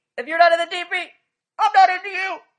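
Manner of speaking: shrill, very high, very loud voice. Reenacting what the boyfriend said: reenacting the boyfriend. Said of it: "let me reenact it".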